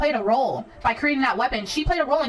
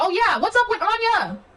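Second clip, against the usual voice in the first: loud, excited, high raised yell; 6 semitones higher than usual. Talking to viewers while playing, asking about Anya; yelling. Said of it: "I know I'm yelling".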